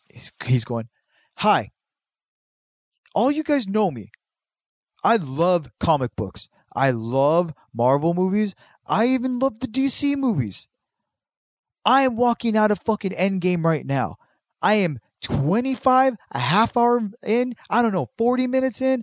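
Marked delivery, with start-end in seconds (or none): 1.4-19.0 put-on angry yelling rant, higher. Retelling a video review of a movie: imitating an angry yelling reviewer. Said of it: "he just looked so angry, like, yelling at the camera".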